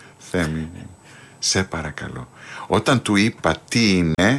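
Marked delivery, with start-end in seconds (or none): 0.2-2.3 put-on humble pleading tone, lower, quieter. Retelling how he begged Themis to write the play's music, retelling humble pleading. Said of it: "Πολύ ταπεινά και σερνόμενο στο πάτωμα, τον παρακάλεσα".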